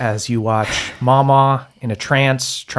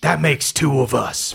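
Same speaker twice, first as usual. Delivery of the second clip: rough, creaky dragon voice; 2 semitones higher than usual. A narrator voices a dragon swooping in overhead at night, booming Big Bev dragon voice. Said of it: "a voice booming overhead".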